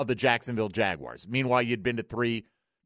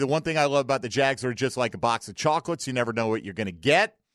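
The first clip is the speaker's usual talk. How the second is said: ordinary delivery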